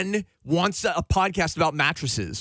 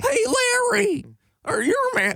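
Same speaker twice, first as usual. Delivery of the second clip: put-on weird commercial-style voice, higher pitch. Quoting an old mattress commercial: imitating a commercial's weird voice. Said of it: "He did some weird voice".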